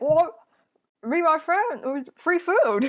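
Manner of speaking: high, loud words pushed through a mouthful of food. Voicing a character caught eating in the orchard, talking with mouth full. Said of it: "mouthful of apple".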